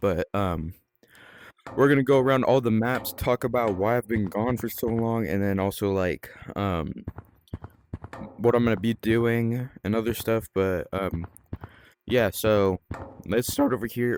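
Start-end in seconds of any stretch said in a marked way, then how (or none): 12.3-14.2 voice breaking, cracking mid-line on a word. Starting a tour around the maps, voice cracking. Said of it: "that was a bad voice crack".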